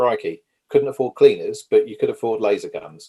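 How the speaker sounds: ordinary talk, nothing marked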